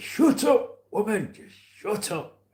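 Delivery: put-on very high, slow Yorkshire accent, granddad voice. Speaker acts out what his granddad used to say to his gran, imitating Stanley Davies. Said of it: "He used to talk like this".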